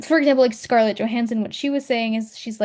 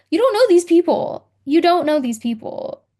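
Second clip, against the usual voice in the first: worked-up, heated, high-pitched, repeated insistent tone; 7 semitones higher, 4 dB louder than usual. Speaker pushes back at everyone questioning a couple's choices; heated. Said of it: "I'm getting so heated over this".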